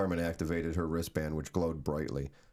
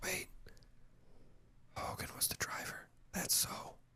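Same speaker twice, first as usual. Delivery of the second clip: hushed whisper under the breath. Reading a story aloud, voicing Sammy's line, whispering. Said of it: "Sammy whispered".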